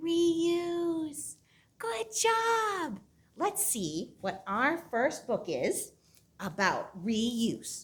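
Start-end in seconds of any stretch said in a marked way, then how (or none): 0.0-1.3 very quiet and drawn out. Leading a group word game, saying the word very quiet. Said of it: "Let's say reuse as quiet as we can".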